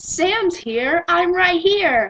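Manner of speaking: fake American accent all through, slow. Retelling answering a teacher at school: American accent.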